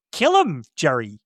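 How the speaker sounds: put-on businesslike, matter-of-fact, no-fuss delivery. Retelling a movie scene's order to kill, imitating a matter-of-fact order. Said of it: "very matter of fact".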